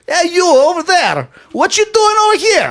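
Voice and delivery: very high-pitched, put-on Russian accent. Two speakers get in character for an argument; playing the russian, mock russian accent. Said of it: "I'll be the Russian".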